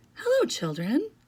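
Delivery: very sweet, honeyed, sugary, syrup-sweet voice. Someone greets the children after footsteps in the hall, in a very sweet voice. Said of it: "someone said in a very sweet voice".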